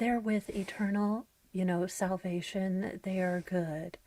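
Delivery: calm, serene, untroubled, certain voice. Imitating how a parent at peace with the deed would speak: Lori Vallow voice. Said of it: "in kind of a Lori Vallow voice".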